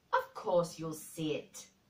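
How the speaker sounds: snapped, indignant, with swooping pitch. Mary answers a man clutching her hands, snapping indignantly. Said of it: "snapped Mary indignantly".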